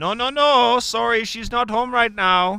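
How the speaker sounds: put-on thick, heavy Eastern European accent, high-pitched. Retelling how mom answered a call pretending to be the sister, heavy Eastern European accent. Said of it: "It's a pretty good attempt there at the accent".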